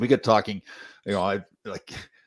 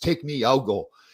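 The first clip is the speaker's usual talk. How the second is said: put-on eager, pitched-up proclaiming tone; 5 semitones higher than usual. Retelling how a man stood up at a service: retelling a booming voice. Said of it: "he said with this booming voice".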